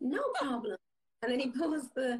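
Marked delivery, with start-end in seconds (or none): 0.0-0.8 put-on American accent. Retelling a son's reply to a small favour: imitating son's American accent. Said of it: "He's got an American accent".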